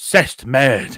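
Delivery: put-on Cockney accent. Showing how one says a French phrase: Cockney accent. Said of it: "you have to really put on, like, a Cockney accent".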